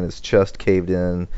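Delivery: ordinary delivery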